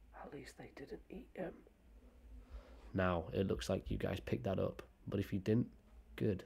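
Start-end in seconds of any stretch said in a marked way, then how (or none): 0.2-1.5 breathy whisper, no voice, very soft. Choosing to whisper the line rather than say it aloud, whispered. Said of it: "I'm going to whisper it".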